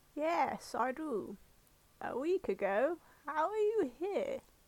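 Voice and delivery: put-on high-pitched elderly woman character voice. Reading a character's reply to visitors, in an old lady voice. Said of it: "I'll do the old lady voice".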